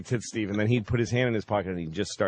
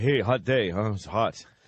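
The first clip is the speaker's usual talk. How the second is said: put-on voice of an oldish local man. Retelling how an oldish man in town greeted people: imitating Florida Steve. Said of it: "He'd just walk up to you".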